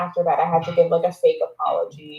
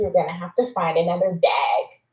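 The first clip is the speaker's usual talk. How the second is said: mock, put-on bitchy tone. Retelling what her brother's girlfriend told him, in a mock bitchy tone. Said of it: "such a bitchy tone".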